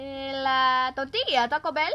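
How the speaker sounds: put-on Spanish accent. Voicing the rat who cooks at the pasta shop, the speaker tries a Spanish accent. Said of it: "Spanish accent".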